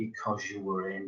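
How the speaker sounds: acted, utterly flat deadpan, low and hushed. Speaker quoting a home invader's line from a movie, imitating a deadpan voice. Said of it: "in a really deadpan voice".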